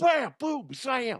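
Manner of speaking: very high blurted delivery. Trying to sound like a football commentator: bad John Madden impression. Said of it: "that's not even a good, uh, Madden".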